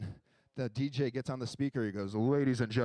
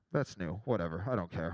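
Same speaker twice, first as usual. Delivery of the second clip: ordinary talk, nothing marked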